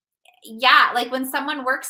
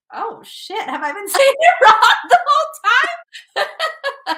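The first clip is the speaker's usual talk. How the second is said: high, loud, shocked, blurted realization. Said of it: "I was like".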